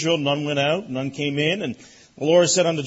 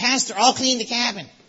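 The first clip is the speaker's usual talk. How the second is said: tiny, squeaky, high little mouse voice; 8 semitones higher than usual. Imitating a little boy from camp offering to clean: squeaky little mouse voice. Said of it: "he's such a squeaky little mouse voice".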